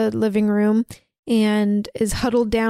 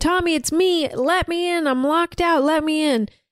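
acted, high-pitched horror-film scream, screaming; 6 semitones higher than usual. Retelling a film scene, a woman calling up to Tommy's window: retelling her screaming. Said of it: "she's screaming".

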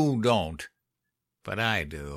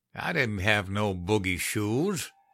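ordinary delivery, nothing marked

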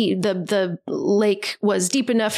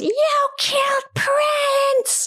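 mock yelling, much higher pitch. Retelling a story scene after the dog is found, retelling Mommy's yell. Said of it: "Mommy yells".

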